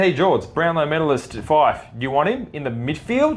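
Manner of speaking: ordinary talk, nothing marked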